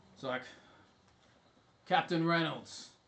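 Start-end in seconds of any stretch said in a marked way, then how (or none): 1.8-2.8 stern call, pitched up. Someone calls out from the yacht to Captain Reynolds, in a stern voice. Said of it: "You hear a stern voice".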